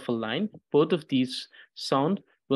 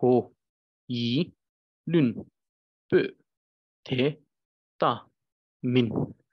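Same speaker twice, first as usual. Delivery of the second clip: "ko-yi-lun-pu" split syllable by syllable, very slow. Teaching someone to read a phrase, saying it syllable by syllable. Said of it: "I'm just focusing on the syllable, not on the flow".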